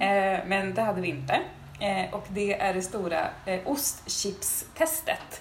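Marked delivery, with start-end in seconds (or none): 3.7-5.4 chips leaned on hard, drawn out slowly. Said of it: "med betoning på chips".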